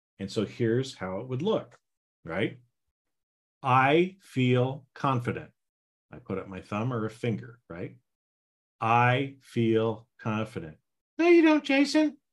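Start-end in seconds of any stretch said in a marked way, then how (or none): 11.2-12.1 goofy, squeaky little put-on voice, very high. Showing how it would look, the speaker answers himself in a funny voice. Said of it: "I'll try to use my little funny voices".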